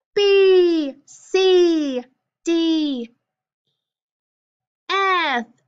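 high, loud, called-out consonants. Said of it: "we're gonna say the consonants loud".

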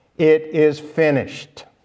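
ordinary talk

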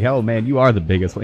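plain

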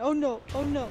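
mock worried, alarmed, panicked repeated cries. Retelling the other player's cries that caused worry: imitating panicked cries. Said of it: "you panicking me 'cause you kept going".

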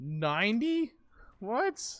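loud voice crack, breaking very high. Hearing the price is 90 caps, voice cracking. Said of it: "my voice cracked horribly there".

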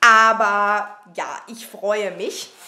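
put-on tipsy, struggling to speak, slow and soft.

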